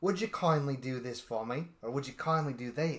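very thick, laid-on put-on Irish brogue. Recounting a game antagonist speaking over the microphone; very Irish accent. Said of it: "in a very Irish accent".

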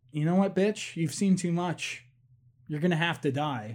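plain

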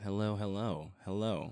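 low-energy tone. Guest just introduced to the audience, greeting them in a low-energy tone. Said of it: "come on with that tone".

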